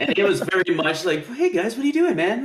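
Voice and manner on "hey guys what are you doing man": pitched way up, easygoing and relaxed. Describing an actor's performance in a movie: Mark Wahlberg impression. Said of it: "he was very like that in this movie".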